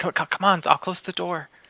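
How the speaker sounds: whispered character voice. Whispering in character to the group to get out: whispering. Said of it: "I'll whisper in".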